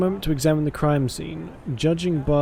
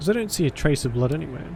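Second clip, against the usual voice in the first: plain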